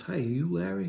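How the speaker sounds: soft, controlled, even, calm, quiet delivery. Retelling a man walking up to greet the speaker, imitating a calm, quiet voice. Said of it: "He said this in such a calm, quiet, controlled voice".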